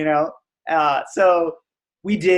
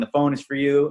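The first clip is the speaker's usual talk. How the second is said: ordinary talk, nothing marked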